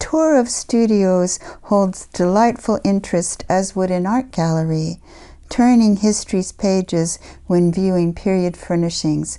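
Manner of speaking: ordinary talk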